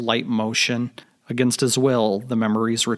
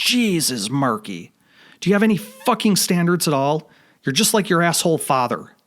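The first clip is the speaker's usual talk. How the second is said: high, shrill, blasting screech; 6 semitones higher, 3 dB louder than usual. Narrator reads a mother calling up the staircase to her son, screeching mother's voice. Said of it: "His mother's screeching voice blasts out".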